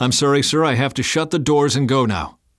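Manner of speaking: respectful yet unbending. A paramedic answers a father begging to go with his son: firm but respectful. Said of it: "Firmly, but respectfully".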